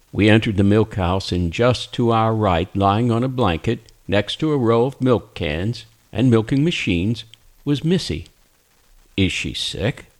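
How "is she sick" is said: hesitant, lower and slower. The narrator asks Dale about Missy, lying on a blanket; hesitant question. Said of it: "I asked hesitantly".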